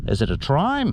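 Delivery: ordinary talk, nothing marked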